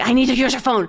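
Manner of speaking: put-on agitated female voice. Retelling a woman coming into the office again wanting the phone: imitating an agitated woman. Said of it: "She sounded agitated".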